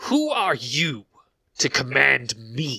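fiery, screeching bird-of-prey voice. Voicing a huge fire-trailing bird of prey: screeching bird of prey voice. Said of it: "it screeches at you and says".

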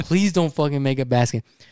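ordinary delivery

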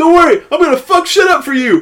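very high, loud shouting. Retelling what a contestant yelled in front of the cast: imitating someone yelling. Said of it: "he yelled".

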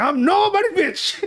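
very high-pitched, heartfelt, real-sounding delivery. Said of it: "a Oscar-winning act".

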